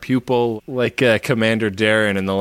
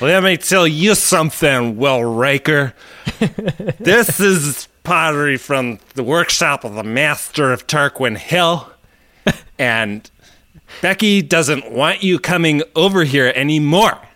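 put-on drunk, eager, pitched-up expert voice; 5 semitones higher, 3 dB louder than usual. Imitating a starship captain who acts both an excited expert and drunk: drunk Picard impression. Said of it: "Your impression of drunk Picard".

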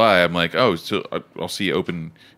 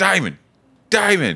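yelling, put-on English accent, much higher, louder; 12 semitones higher, 4 dB louder than usual. Retelling someone calling from a truck window, the speaker repeats the yell in an English accent. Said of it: "when did I get an English accent?".

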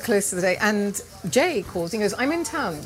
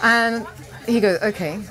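plain

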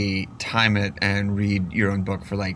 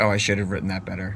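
normal talking voice

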